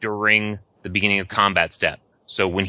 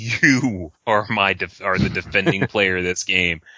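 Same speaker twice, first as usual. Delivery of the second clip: threatening, pointed, menacing tone. Explaining multiplayer Magic, the speaker demonstrates naming the defending player, menacing. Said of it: "glare at him menacingly and go".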